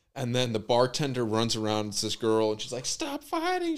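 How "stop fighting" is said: play-acted, very high, frantic shriek. Retelling a bar fight, imitating the bartender: imitating a bartender screaming. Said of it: "screaming and everything".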